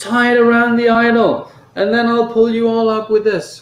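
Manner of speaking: frantic, desperate, high-pitched screaming. Game master as Kilal, throwing a line down to the player, screaming desperately. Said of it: "and he screams".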